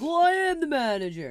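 squealing, shrill, very high, very loud, drawn out. Retelling a phone complaint, imitating the manager's voice. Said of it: "that's exactly how it sounded".

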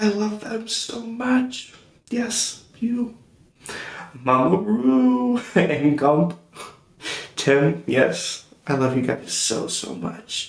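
crying through the words. Speaker thanking their parents on air, crying while talking. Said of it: "I'm crying just thinking about it".

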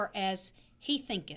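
ordinary talk

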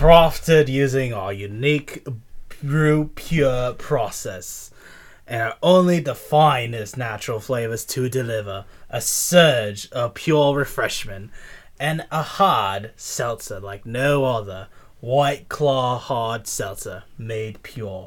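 Australian-sounding read-aloud voice. Speaker reads a hard seltzer's description aloud in an Australian accent. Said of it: "I'm going to read this in Australian".

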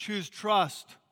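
normal talking voice

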